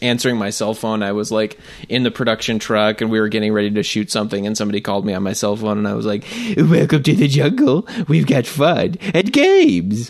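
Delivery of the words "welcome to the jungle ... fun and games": very slow, high, swooping sing-song voice. Answering a phone call in the production truck, in the Homestar Runner voice. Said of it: "in the Homestar Runner voice".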